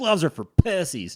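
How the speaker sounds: clumsy put-on Oklahoma accent. Retelling a guy's answer to a question about gloves, in an attempted Oklahoma accent. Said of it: "in his Oklahoma accent".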